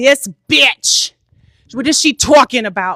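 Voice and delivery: put-on Long Island accent. Retelling a woman's angry video about her, imitating a Long Island accent. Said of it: "she had the best, like, Long Island accent".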